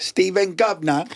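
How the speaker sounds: very high-pitched, put-on English accent. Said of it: "say your name in an English accent".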